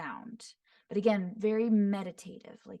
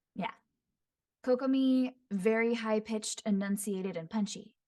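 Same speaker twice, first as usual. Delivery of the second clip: plain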